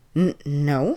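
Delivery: stammering. Reading a story, the old man answers a question: stammering. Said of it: "Peter s-, stammered".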